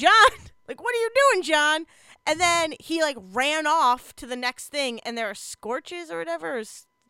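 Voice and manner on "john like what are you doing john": mock, high-pitched yelling, hollering. Retelling a game where a teammate ran in circles: retelling yelling at the TV. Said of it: "So I kept yelling at the T V".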